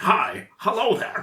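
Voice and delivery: put-on stiff alien-in-disguise voice.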